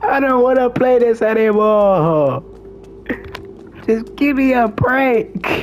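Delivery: pretend sobbing. Playing a game on stream, complaining while fake crying. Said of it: "I'm not actually crying, by the way. I'm fake crying".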